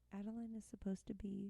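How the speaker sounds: very quiet, slow, hushed half-whisper into the mic. Explaining that adeline is supposed to be asleep: half-whispering into the mic. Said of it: "I'm whispering into the mic".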